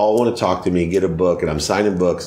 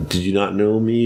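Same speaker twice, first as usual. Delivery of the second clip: normal talking voice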